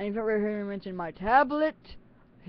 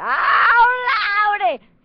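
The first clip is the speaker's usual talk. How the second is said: loud, high burst into own natural accent; 13 semitones higher, 13 dB louder than usual. Chatting to the camera when the accent slips out: slipping into own accent. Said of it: "here goes my accent".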